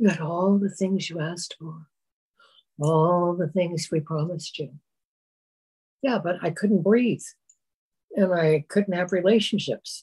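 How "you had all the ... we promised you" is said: very mild, soothing, gentle, soft voice. Voicing the side that answers back in an imagined dialogue, very gentle voice. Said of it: "calling to you in a very gentle voice".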